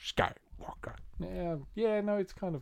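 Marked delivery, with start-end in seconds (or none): 0.0-0.9 breathy, whispered character voice. Repeating the surname in a voice halfway between Yoda and the Emperor. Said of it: "halfway between Yoda and the Emperor".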